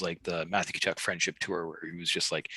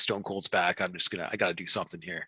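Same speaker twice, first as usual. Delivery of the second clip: normal talking voice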